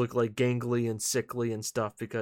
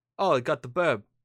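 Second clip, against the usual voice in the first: put-on South London accent; 2 semitones higher than usual. Describing how Red could sound, putting on Idris Elba's South London accent. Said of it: "it's not Cockney".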